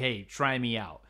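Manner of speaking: ordinary talk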